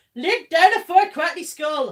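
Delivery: very loud, high, bad Yorkshire accent shout. Asked to do someone's Yorkshire great-granddad shouting at the dog, bad Yorkshire accent. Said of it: "That was not a Yorkshire accent".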